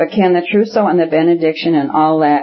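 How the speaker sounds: plain reading voice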